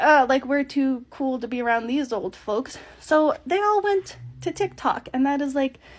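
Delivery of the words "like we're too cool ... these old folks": ordinary delivery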